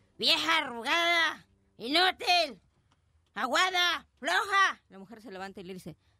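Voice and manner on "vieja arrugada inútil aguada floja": put-on drunk man's voice, very slow and dragged. Telling a joke, voicing a very drunk man insulting his wife: drunk man's voice. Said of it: "Llega un señor bien borracho a su casa y le dice".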